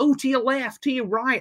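put-on high shouting. Recalling red carpet shouts from Canadians and Americans: retelling Canadians and Americans shouting. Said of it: "lots of Canadians and Americans shouting".

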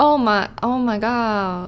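slow, drawn-out mock Southern country accent.

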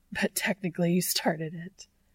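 breathless words laughed out between breaths. A narrator reads one man's line to another, with a breathless laugh. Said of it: "with a breathless laugh".

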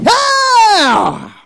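very high, loud, drawn-out shout. Urging the crowd to give the response, the speaker demonstrates it, shouting. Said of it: "You need to shout".

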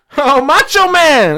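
very high-pitched voice. Greeting someone excitedly while talking with friends: very high-pitched voice. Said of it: "Your voice went, like, eight octaves".

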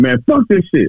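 mock fed-up, furious, irate outburst. Explaining how a man raising his voice is seen, acting out getting mad. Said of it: "You can get mad and be like".

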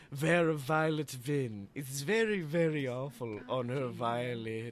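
very low, deep put-on voice, dropped right down. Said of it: "I can do a Vincent Price".

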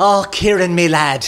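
put-on a bit of an Irish accent. Speaker retells a man calling the day after the fundraiser, slight put-on Irish accent. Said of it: "as he puts on a bit of an Irish accent".

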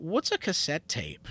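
shy, meek, timid, genuinely curious tone. Retelling how a girl asked a question: imitating a meek question. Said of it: "and very meekly asked".

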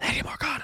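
close, hushed, soft whisper. Acting out a character sneaking up on someone asleep: Agravain whispering. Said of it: "whispers in her ear".

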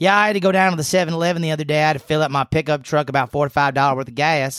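put-on southern drawl. Describing how Steph talks, then mimicking her: imitating Steph's southern drawl. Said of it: "just some of that southern drawl comes out".

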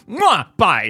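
mock supremely anxious, very loud, high blurt. Retelling a woman's goodbye just before she leaves, imitating someone supremely anxious. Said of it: "in this very like supremely anxious".

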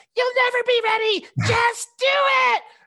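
tiny, squeaky, very high pipsqueak voice. Retelling a movie scene, voicing the brother on his shoulder in a little pipsqueak voice. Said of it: "in this little pipsqueak voice goes".

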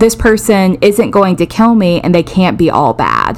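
ordinary delivery

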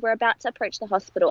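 ordinary delivery

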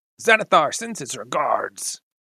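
orcish creature voice. The game narrator voices a character answering who the boss is: orcish voice. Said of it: "He says in an orcish voice".

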